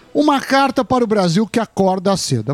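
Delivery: ordinary talk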